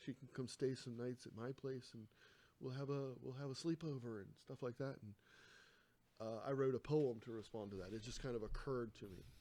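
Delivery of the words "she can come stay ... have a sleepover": put-on small voice. Quoting a girlfriend's note about her neighbor, imitating a little voice. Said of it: "like a little voice going".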